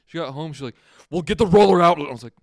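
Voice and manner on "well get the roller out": very loud, high-pitched, scolding yell. Retelling what a pissed-off mom said on getting home: imitating her yelling. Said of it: "Why are you yelling?".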